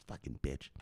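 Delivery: very quiet whisper under the breath. Mid-story, the speaker breaks off for a quiet aside. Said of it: "I have to say it quietly".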